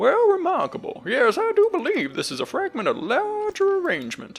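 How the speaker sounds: very high, swooping prospector character voice. Narrating a story, voicing the trader who inspects the stone tablet, prospector-style character voice. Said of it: "this one was like the prospector".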